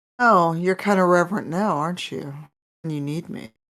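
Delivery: sultry deity voice. Game master voicing the deity a paladin swore fealty to, sultry voice. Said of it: "you hear a sultry voice".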